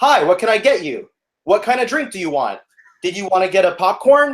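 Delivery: put-on cashier counter-service spiel voice. Retelling taking a man's order, re-enacting using a loud voice. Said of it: "I decided to keep using my loud voice".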